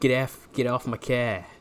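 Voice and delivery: put-on Boston accent. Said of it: "A Boston accent".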